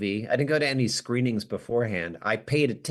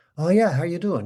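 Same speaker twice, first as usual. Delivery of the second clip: put-on relaxed, casual Irish accent, pitched up; 6 semitones higher, 4 dB louder than usual. Retelling how an actor chatted between shots: imitating Cillian Murphy's Irish accent. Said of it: "his normal Irish accent".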